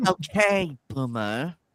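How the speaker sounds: put-on valley girl accent. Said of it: "Try to do it with the Valley Girl accent".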